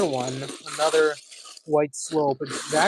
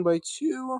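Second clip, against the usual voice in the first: voice breaking in a sudden wild crack; 9 semitones higher than usual. Narrating the next step of the work, the speaker's voice cracks. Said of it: "crazy voice crack".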